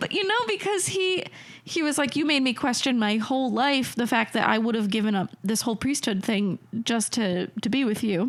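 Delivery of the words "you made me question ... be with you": ordinary talk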